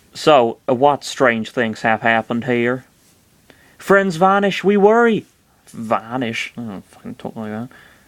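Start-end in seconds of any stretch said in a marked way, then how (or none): 3.8-5.3 bad West Country accent, pitched up, sliding into Welsh. Voicing a character in a video, speak in a bad West Country accent. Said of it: "It's almost Welsh".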